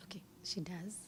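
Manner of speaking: soft, unvoiced whisper. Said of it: "I'm sorry, I'm whispering".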